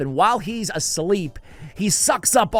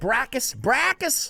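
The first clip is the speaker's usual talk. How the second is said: Boston accent slipping out, pitched up; 7 semitones higher than usual. Speaker announcing his champion pick, saying its name in a boston accent. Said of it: "Boston accent coming out".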